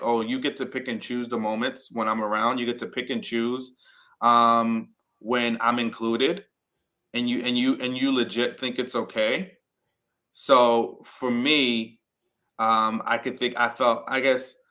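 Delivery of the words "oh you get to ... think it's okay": ordinary talk, nothing marked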